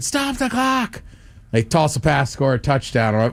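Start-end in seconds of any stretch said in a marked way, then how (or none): 0.0-1.0 very high-pitched, frantic scream. Telling how they reacted while watching a game, retelling own scream. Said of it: "You can hear me just screaming".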